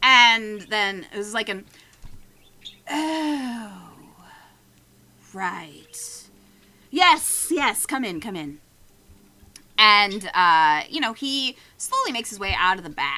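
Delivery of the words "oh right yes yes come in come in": slow, grouchy but not hostile, with drawn-out oh. Voicing the grumpy wizard lizard greeting the party: Vizion grumpy voice. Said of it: "he's not hostile, he's just a grumpy guy".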